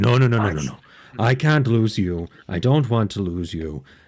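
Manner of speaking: plain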